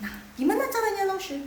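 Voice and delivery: eager, quick, high delivery.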